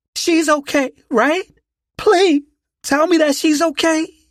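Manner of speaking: shrill, trembling panicked voice. Reading a story aloud, a mother begging doctors for news: voice trembling with panic. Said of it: "her voice trembling with panic".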